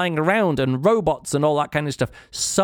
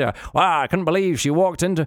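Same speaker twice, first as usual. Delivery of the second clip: hard-boiled film noir private eye narration voice. Showing how a narrator puts on a voice, in a noir hard-boiled private detective movie voice. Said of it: "the movie voice".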